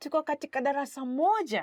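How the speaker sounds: voice lifts a little toward the end. Demonstrating a Swahili sentence to learners, voice rising at the end. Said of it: "towards the end, you kind of raise your voice a little bit".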